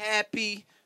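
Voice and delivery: emphasis on the word happy. Acting out someone ordering at a fast-food counter, stress on HAPPY. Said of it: "Emphasis on happy".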